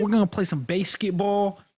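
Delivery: put-on Pennsylvania accent. Imitating a man who was the most Pennsylvania: strong Pennsylvania accent. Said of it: "this dude was the most Pennsylvania".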